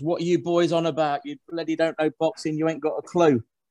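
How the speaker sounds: play-acted screaming, kept mild. Retelling listening to the podcast while driving: imitating himself screaming at the radio. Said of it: "I'm screaming at it sometimes".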